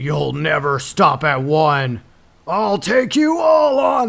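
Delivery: epic, heroic voice, drawn out very slow. Retelling a movie fight scene, quoting the hero: Peter Cullen's epic Optimus voice. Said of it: "with Peter Cullen's epic voice".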